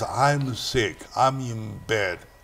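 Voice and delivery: put-on feeble, faded voice, soft and slow. Retelling a sick veteran's late phone call: imitating a very weak voice. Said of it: "he called back in a very, very weakening voice".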